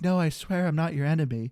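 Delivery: put-on flat, odd childlike voice. Acting out a game character's plea to a lady: imitating a weird voice for children. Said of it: "weird voices when they talk to children".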